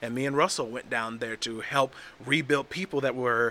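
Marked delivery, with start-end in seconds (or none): none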